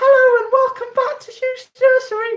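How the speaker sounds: put-on very high kid presenter voice.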